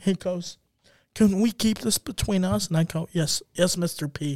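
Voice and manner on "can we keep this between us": put-on drunk sobbing voice. Retelling what mr. p said to the speaker, imitating mr. p drunk crying. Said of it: "He's like drunk crying".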